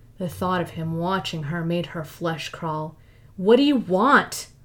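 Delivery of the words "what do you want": louder, pressing, insistent repetition. Lara asks him again what he wants, this time more loudly. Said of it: "this time more loudly".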